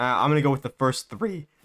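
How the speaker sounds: voice breaking mid-line. Quoting what someone answered, voice cracking. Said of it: "that was a terrible voice crack".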